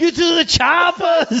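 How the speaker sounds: shrill, high, slow, drawn-out scream. Retelling what the governor screamed at everybody: imitating Arnold Schwarzenegger screaming.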